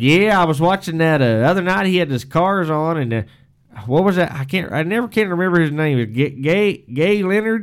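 put-on thick Texas accent. Retelling a man on the two-way radio after harvest, thick Texas accent. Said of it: "big time Texas, hard thick accent".

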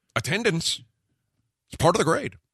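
very high, exaggerated, overdone angry scolding caricature. Taking a turn at Creighton's catchphrase after being told he says it angrily, mock-angry. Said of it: "And Creighton says it angrily".

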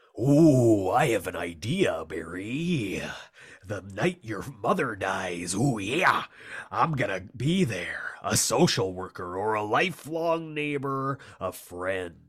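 slow, drawn-out character voice. Reading a comic line aloud as the Macho Man: Macho Man voice. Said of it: "I'll read this as the Macho Man".

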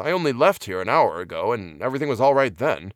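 ordinary delivery

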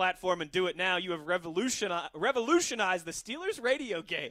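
ordinary talk, nothing marked

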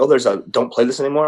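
plain

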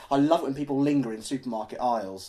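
ordinary delivery

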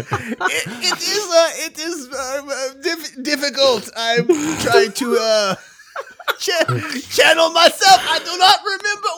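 fake accent sliding into French, very high. Voicing a ghost who struggles to remember: put-on accent drifting French. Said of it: "It sounds like it is becoming French".

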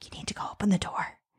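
quiet whisper. Retelling what was whispered to him during sex: retelling a whisper. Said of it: "And I whispered to him".

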